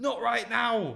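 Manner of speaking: put-on very high Scottish-accented shout. Retelling what a woman shouted back: accidental Scottish accent. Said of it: "I don't know why she's Scottish".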